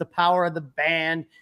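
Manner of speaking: ordinary delivery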